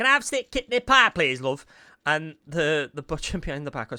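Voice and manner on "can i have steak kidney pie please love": put-on high-pitched, tiny little old woman voice. Retelling a game scene at a butcher's, doing a little old woman voice. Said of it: "there's this little woman".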